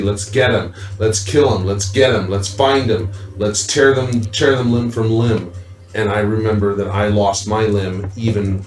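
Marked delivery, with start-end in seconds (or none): none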